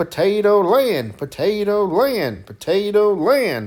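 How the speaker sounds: dopey cartoon drawl, very slow, swooping, high. Describing visiting Potato Land at Hollywood Studios, saying its name in a Goofy voice. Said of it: "try to talk like Goofy and say".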